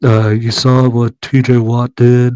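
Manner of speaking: slow, drawn-out mumble, close into the microphone. Mocking a football player's podcast: mumbling Micah Parsons impression. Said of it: "let me mumble a little bit more".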